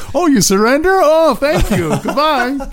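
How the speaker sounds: loud, high-pitched mocking.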